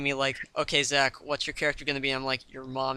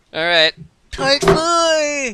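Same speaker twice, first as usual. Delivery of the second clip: deliberately grating voice, very high, very slow, drawn-out; 12 semitones higher, 8 dB louder than usual. Starting off a new part of the podcast: very annoying voice. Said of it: "just gonna do a very annoying voice".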